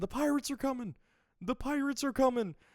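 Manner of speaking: shrill, very high-pitched, freaked-out screaming. Retelling a scene where a character runs out: imitating Usopp screaming. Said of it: "he just starts screaming".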